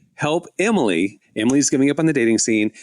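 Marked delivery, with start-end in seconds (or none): none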